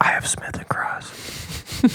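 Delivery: drawn-out slow whisper, close and intimate. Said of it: "super quiet and all this stuff".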